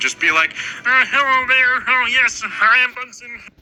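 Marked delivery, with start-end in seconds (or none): 1.1-3.4 playful monster voice, higher pitched and slower. Suggesting how the little monster guy should sound, fun Bunsen monster voice. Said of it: "Make him sound fun".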